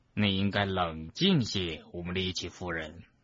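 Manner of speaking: low, hushed, slow, unhurried, deliberate, measured. Urging a lady to stay calm, speaking in a low, slow voice. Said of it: "金斯兰用低沉缓慢的声音说".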